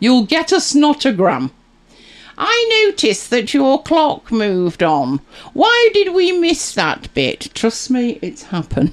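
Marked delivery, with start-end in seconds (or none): 2.4-7.5 snide, snarky, pitched-up, put-on complaining voice. Imitating a viewer's complaint about a live show, in a put-on snarky voice. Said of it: "How's my snarky voice coming along".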